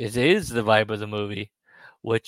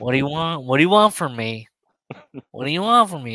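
put-on soup-slurping voice, higher and louder; 4 semitones higher, 5 dB louder than usual. Imagining a bad interview with Sudi, imitating Sudi drinking soup. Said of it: "he's drinking soup, and he's going".

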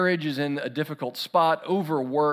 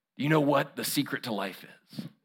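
quieter, put-on cowboy impression; 5 dB quieter than usual. Retelling a movie scene, the cowboy Curly's line to Mitch, in attempted Jack Palance voice. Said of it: "my attempt at a Jack Palance voice".

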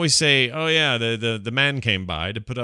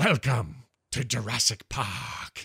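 deliberate, very slow, drawn-out film-line delivery; 6 dB quieter than usual. Answering who will welcome them to Jurassic World: impression of Jurassic Park welcome. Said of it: "So I don't do it as good as you".

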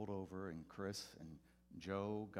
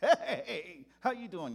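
very high, very loud, cheesy corny preacher voice; 11 semitones higher, 14 dB louder than usual. Retelling greeting a man at church every Sunday, in a corny preacher voice. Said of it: "That pastor".

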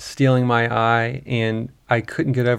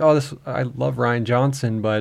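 normal talking voice

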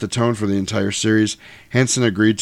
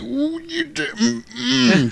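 very high, slow, drawn-out creaky voice, irritated. Imitating an actor playing Dracula who looks annoyed, not hurt: imitating Jack Palance's annoyed Dracula. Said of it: "he's like".

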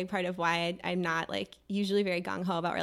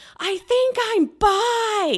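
very loud, very high, slow shout, bi stretched; 12 dB louder than usual. Retelling coming out to a friend in a loud nightclub: imitating own yelling. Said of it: "I'm, like, yelling".

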